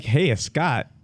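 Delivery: put-on nasal voice. Speaker imitates their dad saying hello: imitating Scott's nasal voice. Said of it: "his voice because it's like kind of nasally".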